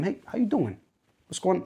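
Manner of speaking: real New Yorker accent, quick and swooping. Urging listeners to check in on a friend, in a New York accent. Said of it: "That was a real New Yorker".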